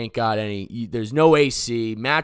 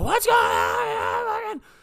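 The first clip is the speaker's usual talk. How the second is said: put-on raw, rasping yell, pitched very high. Recounting being attacked, the speaker acts out his past self yelling: retelling his own yell. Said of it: "I'm like yelling".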